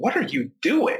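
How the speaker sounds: angry, mad, very high-pitched delivery. Showing how a written question reads if you think the sender is mad, sounding mad. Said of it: "you think that I'm mad at you".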